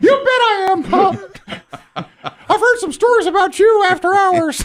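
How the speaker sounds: very high, slow, little cartoon mouse voice. Acting out Walt Disney firing a young actor: Mickey Mouse voice. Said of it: "You're not gonna fire me in the Mickey voice".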